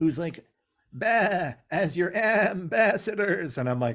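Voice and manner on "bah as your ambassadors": high, very slow, drawn-out sheep bleat. Retelling a story, imitating a sheep judge at court, in a sheep voice. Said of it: "I actually like the way the sheep talk".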